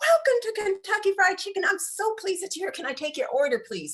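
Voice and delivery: very high, enthused, energetic delivery. Speaker shows how a Kentucky Fried Chicken worker should greet customers; energetic greeting. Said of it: "With some e- energy".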